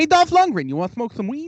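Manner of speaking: different, high, lifted, inviting voice. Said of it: "Ron Funches' voice".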